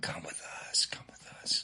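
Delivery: hushed, soft, breathy whisper. Retelling a ghost story of shadows in the woods beckoning: imitating a whisper.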